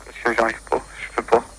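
quiet, trembling, shaken, frightened voice.

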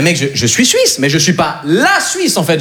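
normal talking voice

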